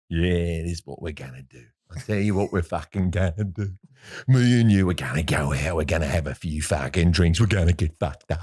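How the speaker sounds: very low, dropped character voice. Retelling a wedding story, imitating a brother. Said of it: "Can you stop doing impersonations of me?".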